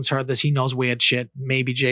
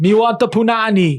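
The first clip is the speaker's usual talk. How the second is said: fake Jamaican accent, high and loud; 9 semitones higher, 5 dB louder than usual. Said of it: "He does a fake Jamaican accent".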